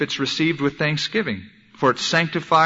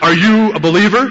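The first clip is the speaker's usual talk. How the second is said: very stern, very loud delivery; 7 semitones higher, 9 dB louder than usual. Retelling what a man who walked up to him asked; imitating a very stern voice. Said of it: "In a very stern voice".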